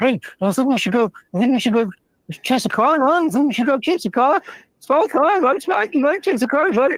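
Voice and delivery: very high pitch swinging around. Retelling a cartoon scene: Looney Tunes little dog voice. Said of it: "little dog's like".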